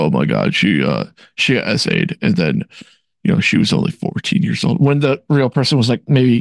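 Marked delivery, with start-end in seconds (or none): 0.0-4.8 over-the-top dramatic, deep, swooping voice. Mocking dramatized Mary Sue storytelling: exaggerated deep voice. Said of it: "but with a deep voice".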